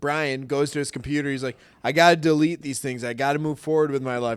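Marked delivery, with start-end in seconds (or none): none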